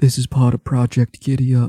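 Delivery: whispering. After giving a wink, a player's character leans down and speaks, whispering. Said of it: "I lean down and I whisper".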